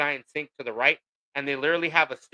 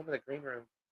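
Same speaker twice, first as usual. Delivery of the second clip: much softer, hushed, secretive whisper. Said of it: "Why you whispering?".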